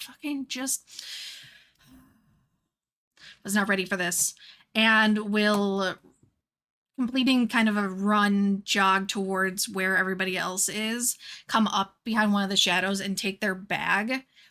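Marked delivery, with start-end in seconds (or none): 0.0-4.3 fast, grumbling mutter under the breath. Player voicing their character as others start combat, grumbling under breath. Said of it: "grumbles and kind of like mutters under their breath".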